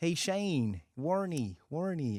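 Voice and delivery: put-on slow, high, stretched-out American accent. Tiger Woods turns around and greets Shane Warney, in Tiger Woods's American accent. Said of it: "in his American accent".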